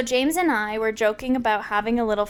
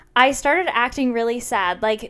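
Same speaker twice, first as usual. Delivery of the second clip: ordinary delivery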